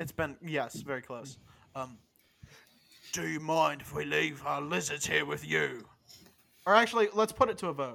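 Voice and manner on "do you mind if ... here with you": creaky, put-on, in-character role-play voice. Voicing a character yelling through a hole, asking to leave lizards. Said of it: "I gotta find the voice".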